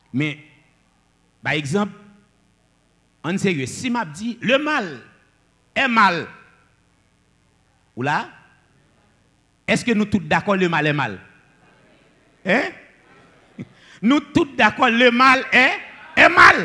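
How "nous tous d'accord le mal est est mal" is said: loud, high, booming big voice. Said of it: "Qui te dit là avec une grosse voix?".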